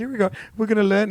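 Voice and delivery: odd, strange-sounding, high man's voice. Retelling what the guy in a fudge video said: imitating his weird voice. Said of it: "He has a weird voice".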